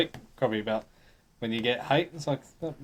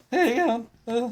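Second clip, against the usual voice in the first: put-on very high, cracking teen voice, breaking; 12 semitones higher, 4 dB louder than usual. Imitating someone nervous on camera in a video: imitating a breaking teenage voice. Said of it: "voice is breaking, you sound like a pre-adolescent, like a teenager".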